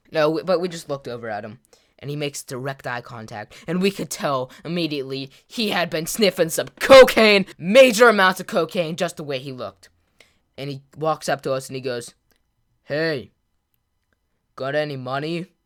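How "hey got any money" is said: slow, put-on tone, neither friendly nor menacing. Retelling a man walking up asking for money: imitating a half-friendly demand. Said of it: "that in between like voice".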